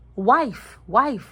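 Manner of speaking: word wife stressed, punched hard and loud.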